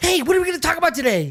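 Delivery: very high, loud helium-like voice, up an octave. Speaker greeting a buddy after slapping their cheeks to wake up, voice up an octave. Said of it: "why do you go up like an octave".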